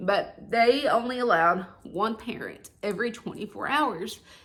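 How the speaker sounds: emotional voice, welling up, close to breaking. Recalling the hospital's one-parent rule during covid, getting emotional. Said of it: "I'm gonna get emotional again here on camera".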